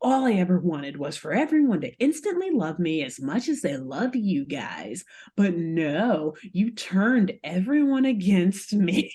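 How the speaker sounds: put-on villain voice. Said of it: "goes into this monologue".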